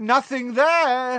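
very high, shrill shout. Dodging her jets of green light from behind a goblin, he shouts back. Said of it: "he shouted".

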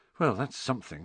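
muttering. Harry remarks to the others on Hagrid's answer, muttered. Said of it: "Harry muttered to the others".

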